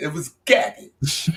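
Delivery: put-on New York accent. Calling a movie cut garbage, then repeating it in a put-on New York accent. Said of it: "I'm gonna say it in my New York voice".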